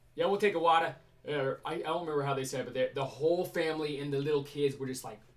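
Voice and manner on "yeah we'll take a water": fake New Jersey accent, higher pitch. Telling a funny story about meeting a family from Jersey, put-on New Jersey accent. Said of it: "I led with the Jersey accent".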